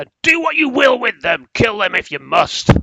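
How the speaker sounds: very loud, commanding, high, swooping, booming shout. Retelling what a man shouted before stomping off with the guards, retelling a loud shout. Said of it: "he shouts quite loudly".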